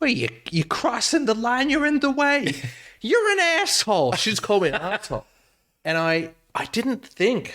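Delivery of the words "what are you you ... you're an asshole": put-on heavy, thick Brooklyn accent, high-pitched, swooping. Retelling what a lady at a pedestrian crossing said, in a thick Brooklyn accent. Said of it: "She had like this weirdly a thick like Brooklyn accent".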